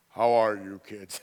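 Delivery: big, booming, very loud deep baritone. Recalling John's family gathering for dinner, the father greeting the kids: John's dad's baritone voice. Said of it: "John's dad had this deep baritone voice".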